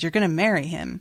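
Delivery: normal talking voice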